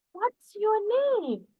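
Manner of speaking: rising pitch at the end on name. Explaining spoken english to viewers, showing a question's tone: rising question intonation. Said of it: "see my tone, how it is changing".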